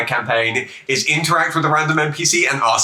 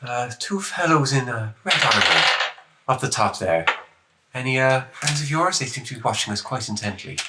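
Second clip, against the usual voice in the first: hushed, soft, discreet side remark; 5 dB quieter than usual. Speaking in character to a companion about two watchers: speaking quietly in character. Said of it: "just quietly say".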